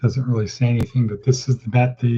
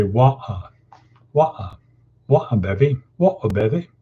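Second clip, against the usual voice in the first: mock British accent, dropped t in water. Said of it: "British people say".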